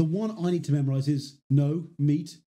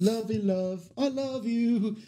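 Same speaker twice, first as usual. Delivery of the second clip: put-on Liverpool accent, pitched up high; 7 semitones higher, 3 dB quieter than usual. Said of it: "makes the [name] sound".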